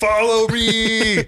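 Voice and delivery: high, shouted war cry at full voice. Showing another speaker how the game's war cries sound: shouted war cry. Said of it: "What do the war cries sound like?".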